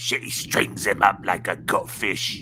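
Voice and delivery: slow, heavy, thick Cockney accent, orc voice. Describing how the best orcs talk, the speaker demonstrates a thick cockney orc voice. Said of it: "all the best orcs will always be like".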